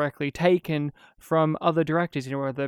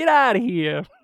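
put-on Brooklyn cab driver accent, higher and louder; 8 semitones higher, 5 dB louder than usual. Imitating Darren Aronofsky, who sounds like a Brooklyn cab driver: Darren Aronofsky impression. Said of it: "he sounds exactly like a Brooklyn cab driver".

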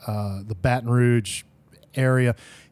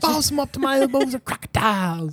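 high, thick, amateurish fake Southern movie accent. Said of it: "sounds like a bad community theater reading".

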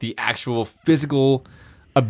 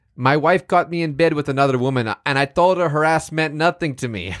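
terrible, bad, put-on Mexican accent; 4 semitones higher than usual. Using the word of the day in a sentence, terrible mexican accent. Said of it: "Sorry about my terrible accent".

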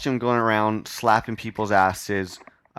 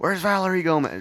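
put-on drunk yelling, higher pitch; 8 semitones higher than usual. Retelling how a drunk guy at a party yelled a name: imitating a drunk guy yelling. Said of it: "Just yells your name".

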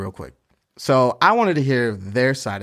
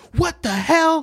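mock, very high-pitched, frantic, freaked-out outburst. Retelling a woman's reaction in a confrontation: mimicking her freaking out. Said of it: "She's just like freaking".

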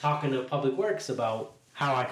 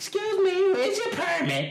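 put-on very high-pitched, swooping, nosy old lady voice; 4 dB louder than usual. Retelling being asked for a permit while selling on a corner: imitating an old lady. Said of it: "It'd be the old lady from the third floor".

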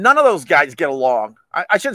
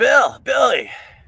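casual, easy, coaxing, pitched-up voice; 5 semitones higher than usual. Retelling how Anthony approaches Bill Burr: Anthony impression. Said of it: "That's my aunt impression".

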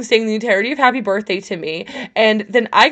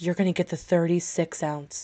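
put-on deadpan delivery, lower and quieter; 5 semitones lower, 11 dB quieter than usual. Retelling a waiter's reply to a margarita order, imitating a deadpan waiter. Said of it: "this waiter deadpan looks at me and goes".

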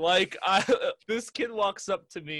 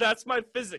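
put-on proud child voice, higher pitch; 4 semitones higher than usual. Retelling what a kid said after crossing his arms: imitating a kid saying it proudly. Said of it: "so proudly".

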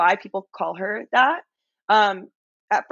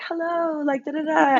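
very friendly, high, slow little fairy voice; 8 semitones higher than usual. Describing a fellow rookie castmate, the speaker imitates her little fairy voice. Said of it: "very like a little fairy voice".

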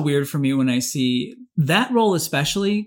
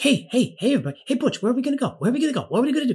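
very high, yippy, yappy little cartoon dog voice; 9 semitones higher than usual. Recalling an old cartoon, imitating a yippy cartoon dog. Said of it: "the yippy dog next to him that's like".

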